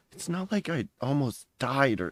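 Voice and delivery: muttering under the breath. Voicing a character after being shoved to the back: muttering under his breath. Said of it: "mutters under his breath".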